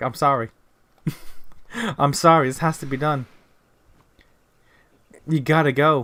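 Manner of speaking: fake tearful voice. Acting out a company apologizing to its employees: mock crying while apologizing. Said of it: "pointing a gun and he's crying".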